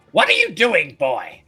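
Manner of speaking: booming, very loud, full-volume yell. Voicing a character who yells at a boy for horse dancing: Shrinden yelling. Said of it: "you hear Shrinden yell".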